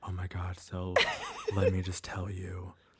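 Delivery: slow, secretive, hushed half-whisper. Retelling how people greet her right as she gets in the door, retelling a half-whisper. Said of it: "why are you whispering at me?".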